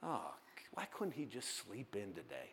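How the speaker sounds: very low, very quiet, deep, under-the-breath muttering. Voicing the devil complaining that someone is awake: muttering under his breath. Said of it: "just say under his breath".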